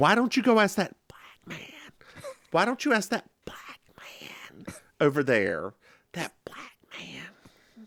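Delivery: high, hushed, secretive stage whisper. Retelling how she says the important part, retelling her whisper. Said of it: "She she she whispers the like important".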